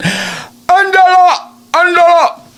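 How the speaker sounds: put-on calling out in Mexican accent, very high. Imitating a mom calling her daughter's name, calling out in mexican tone. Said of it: "her mom would call her in the Mexican tone".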